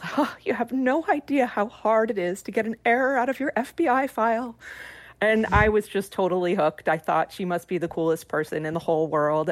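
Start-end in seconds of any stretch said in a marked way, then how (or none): 0.2-4.5 dainty, sugary little voice, pitched high. Niece recalls her aunt hanging up the phone: Priscilla's sweet little voice. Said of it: "she said in her sweet little voice".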